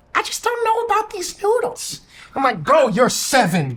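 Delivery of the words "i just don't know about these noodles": put-on very high, snooty, skeptical kid voice. A parent retells what the young son said about ramen noodles, imitating his young son. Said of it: "And they like".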